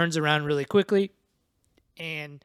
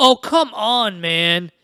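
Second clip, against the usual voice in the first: high, loud, drawn-out exasperated groan. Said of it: "and he just goes".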